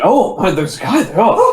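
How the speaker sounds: over-the-top, gushing, high, swooping excitement. Playing a character who spots a guy: overly excited. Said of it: "overly excited".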